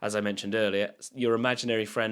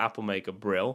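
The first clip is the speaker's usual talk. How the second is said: ordinary delivery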